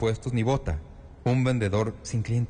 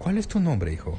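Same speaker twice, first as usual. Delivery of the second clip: gentle, slightly higher voice; 5 semitones higher than usual. A bricklayer lets go of a boy's arms and asks his name; softened voice. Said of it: "su voz se suavizó y sus ojos perdieron la cólera".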